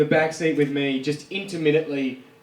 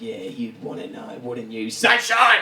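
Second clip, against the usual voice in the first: put-on bogan woman voice, much lower; 3 semitones lower than usual. Retelling a woman's reply in the bar, imitating a bogan woman. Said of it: "she was such a massive bogan".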